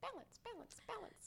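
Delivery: irritating, squeaky, very high little mouse voice. Describing the thought that keeps running through the back of the head, as a really annoying mouse voice. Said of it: "Like this really annoying mouse".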